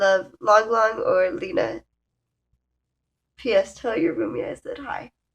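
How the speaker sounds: tearful, holding back tears while reading. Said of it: "now I got something in my eye".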